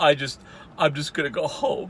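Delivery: put-on cracking voice. Retelling how he ended after closing the dumpster, imitating his voice cracking. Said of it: "his voice is cracking a little".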